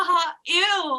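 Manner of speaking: very loud, shrill, stuck-up, disgusted "ew".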